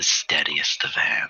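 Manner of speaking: soft, hushed, secretive whisper. Narrating a character who leans in toward the listener, whispering. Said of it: "she whispers to you".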